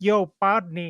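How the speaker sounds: put-on seductive, sexy voice. Retelling how a player behind them at the batting cages got in their ear, imitating a sexy voice. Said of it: "with this sexy voice".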